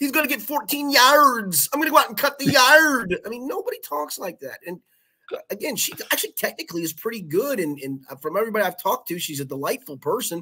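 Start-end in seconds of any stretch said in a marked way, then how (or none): 0.0-3.2 very high strained announcer voice, painfully stressing "yards". Redoing an earlier bit at a listener's request: Beth Mowins impression. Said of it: "I just did the Beth Mowins".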